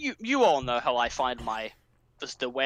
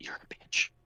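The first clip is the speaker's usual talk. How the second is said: hushed, soft, breathy whisper, insulting tone. Acting out a line from a whispering killer character: whispering. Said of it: "He just whispers".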